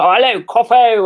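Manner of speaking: put-on ridiculously posh 1940s wartime pilot accent. Imitating how a very posh man talks to the speaker: posh 1940s pilot voice. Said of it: "he sounds like he's basically swallowed like a nineteen forties World War Two like pilot".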